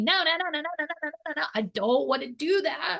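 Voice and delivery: no's squealed in a high, screaming voice. Acting out a brain that resists the body's decisions: imitating own brain screaming. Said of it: "my brain is screaming".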